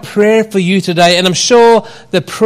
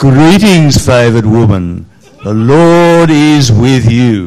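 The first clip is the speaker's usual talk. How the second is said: deeper, lower-pitched voice; 8 semitones lower, 3 dB louder than usual. Reading the angel's greeting aloud when asked for a deeper voice. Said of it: "Who can do a deeper voice?".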